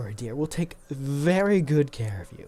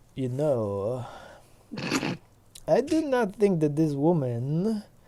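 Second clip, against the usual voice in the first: put-on full Eastern European accent with drawn-out "know". Storyteller voicing the pig Arasi as it looks up at a player: Eastern European accent. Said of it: "pig became Eastern European".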